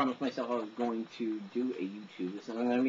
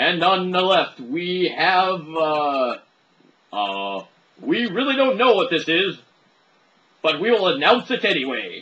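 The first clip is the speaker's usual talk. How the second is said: very loud, booming, swooping announcer delivery; 7 semitones higher, 13 dB louder than usual. Telling a story, launching into the whole announcer voice. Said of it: "the whole announcer voice".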